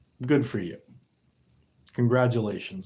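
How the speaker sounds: sarcastic, mocking, praising tone. Congratulating viewers who guess the weight correctly: sarcastic congratulations. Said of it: "You get a very sarcastic congratulations".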